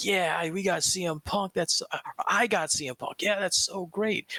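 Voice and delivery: high, giddy fanboy cheer. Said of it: "and be like".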